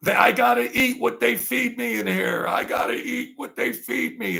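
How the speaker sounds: mock, very high, raspy, rough screaming hollering. Retelling a prisoner behind a screen during visits, imitating a prisoner screaming. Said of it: "he was screaming and hollering".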